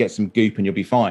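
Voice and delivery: ordinary talk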